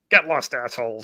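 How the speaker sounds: put-on voice turning hostile. Imitating Evelyn as her mask drops: imitating Evelyn turning nasty. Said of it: "she turns and she gets like".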